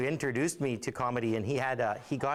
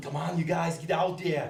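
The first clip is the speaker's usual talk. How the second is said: put-on Austrian accent, pitched up, rousing emcee delivery; 5 semitones higher than usual. Impersonating a celebrity emceeing a powwow: Arnold Schwarzenegger impression. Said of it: "This is my impersonation of Arnold Schwarzenegger emceeing one of our powwows".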